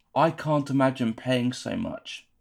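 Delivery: ordinary delivery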